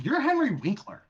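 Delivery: put-on accusatory exclamation. Retelling recognizing someone in a lobby, with a put-on, almost accusatory tone. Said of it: "it was almost accusatory though".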